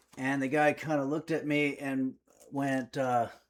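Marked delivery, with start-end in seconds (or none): none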